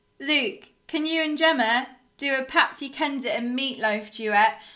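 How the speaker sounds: usual speaking voice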